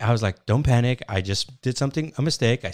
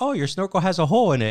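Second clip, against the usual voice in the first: nonchalant, offhand, unbothered, pitched up; 6 semitones higher than usual. Retelling the wife's remark after a near drowning: imitating a nonchalant remark. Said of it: "she said it so nonchalantly".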